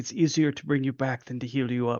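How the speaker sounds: menacing, threatening in-character delivery. Looking a wounded ally in the eyes in character: menacing in-character line. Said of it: "the way you said that, I thought you were gonna stab him".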